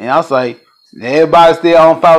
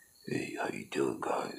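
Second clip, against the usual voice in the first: barely audible, very quiet, low whisper; 26 dB quieter than usual. Imitating Ralph Ancient, usually quiet as a mouse: Ralph Ancient impression, low and quiet. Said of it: "He got that low voice, you know, like".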